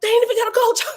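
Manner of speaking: put-on very high, shrill yelling. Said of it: "I'm over there yelling, but a little bit low".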